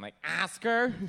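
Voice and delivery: doing a Chicago accent. Speaker asks someone's name, then repeats it in a Chicago accent. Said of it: "My Chicago accent".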